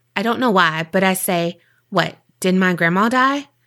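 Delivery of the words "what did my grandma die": normal talking voice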